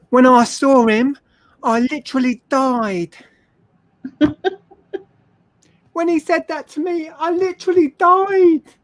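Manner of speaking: very high put-on Essex accent. Giving examples of how people overuse the word literally; Essex accent. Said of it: "is that your Essex accent?".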